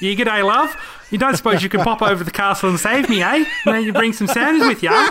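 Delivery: high, fast put-on Australian accent, rattled off. Imagining a character asking a hero to rescue her from a castle, in an australian accent. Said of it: "An Australian accent would have been the absolute worst".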